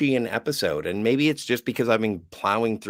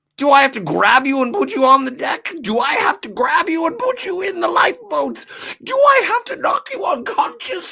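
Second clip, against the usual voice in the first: frantic, shrill, screechy panicked yelling, very high; 6 dB louder than usual. Acting someone urging everyone to abandon ship, screechy panicked shouting. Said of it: "I'm getting too screechy".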